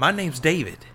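abrupt blurt. The narrator steps closer to a girl by the road; blurted out. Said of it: "I blurted".

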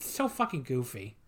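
ordinary talk

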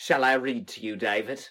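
terrible, clumsy, fake put-on British accent. Speakers trading deliberately bad accents, one tries another line: bad British accent. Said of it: "These are just so bad".

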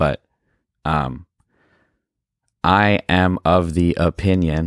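very slow, drawn-out, drifting speech trailing off. Starting to share a bold opinion, speaking slowly, trailing off. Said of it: "I spoke slowly there".

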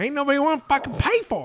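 very high-pitched character voice. Told their voice needs to be higher, the speaker tries again: Jim Cornette impression. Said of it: "that's better".

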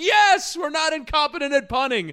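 very high, shrill, loud sarcastic screaming cheer. Retelling standing up at a game: retelling a sarcastic scream. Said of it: "I was screaming".

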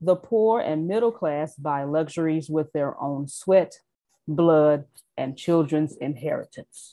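slow, deliberate, careful word-by-word reading. Reading a quoted passage about the poor and middle class, reading slowly. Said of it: "when I start reading slow like Antonio, you know that's what I'm talking about".

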